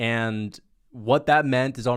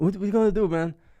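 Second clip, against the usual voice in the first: terrible, bad French accent, pitched up; 8 semitones higher than usual. Retelling Gone asking his friends about the day, Gone in horrible French accent. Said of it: "sorry for the French accent, it's a horrible accent".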